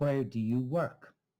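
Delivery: strong stress on both where and work. Showing sentence stress in an example question: stress on where and work. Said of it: "the stress is on the first and the last word".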